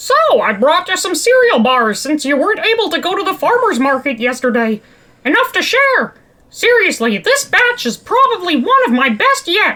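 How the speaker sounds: high-pitched cartoon mouse character voice. Voicing a cheerful character greeting someone: Mickey Mouse voice.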